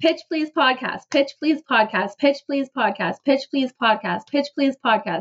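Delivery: rattled off very fast like a tongue twister, repeated phrase. Repeating the show's name as a tongue twister: saying it really fast. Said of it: "when you try to say it really fast".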